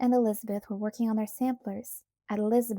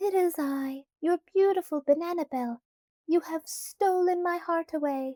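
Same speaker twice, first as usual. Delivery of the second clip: high, pitched-up put-on voice; 7 semitones higher than usual. Mimicking Annabel while speaking to a wooden head, high Annabel impression. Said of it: "she said in a high voice".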